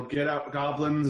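shouting. A tabletop player's character bursts through the door at goblins, yelling.

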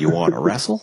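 high, clip-like soundboard voice. Quoting a Chris Hansen soundboard clip, imitating Chris Hansen. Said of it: "the Chris Hansen soundboard up in here, where he's like".

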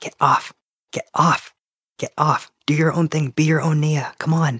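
steady, repeated, hushed half-whisper under the breath. Player's character speaks to the lump on her shoulder, half-whispering. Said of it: "she'll just be whispering".

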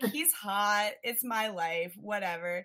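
ordinary delivery

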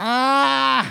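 put-on high, piercing baby scream.

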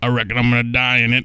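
put-on slow Southern drawl. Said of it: "in the fucking Carl voice".

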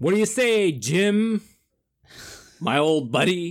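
put-on old-fashioned movie-star delivery. Playing jim in an improvised scene with a server: old-timey actor voice. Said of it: "When did I become an old-timey actor?".

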